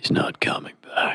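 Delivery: deep mechanical put-on voice. Answering a film line cued by the other speaker: robotic deep Keanu voice. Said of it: "robotic deep voice of Keanu".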